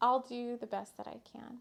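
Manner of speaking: mock polite, sugary-sweet little voice. Woman retelling her reply to an elder, in a put-on sweet polite voice. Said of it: "in my nice little sweet voice".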